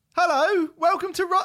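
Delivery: very high, piping, high-pitched voice. Podcast host opening the show, really high-pitched. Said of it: "that was really high pitched".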